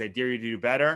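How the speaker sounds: plain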